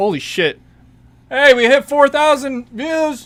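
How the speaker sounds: shrill, booming, loud, rising excited yelling. Streamer sees his YouTube short hit four thousand views, yelling excitedly into the mic. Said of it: "Sorry for yelling into the mic".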